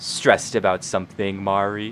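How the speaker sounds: menacing, sinister, scheming tone. A voice creeping into the back of your mind speaks; sinister, scheming voice. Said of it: "his sinister, scheming voice creeps".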